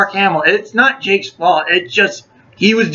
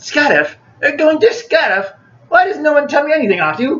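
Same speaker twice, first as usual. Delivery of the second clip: exaggerated British Cockney accent, pitched high; 7 semitones higher than usual. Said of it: "that over-the-top British Cockney voice".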